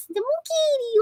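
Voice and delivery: put-on very high pet baby-talk voice. Speaker shows the changed voice they use when talking to their pet; baby-talk voice for a pet. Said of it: "I talk to her like this".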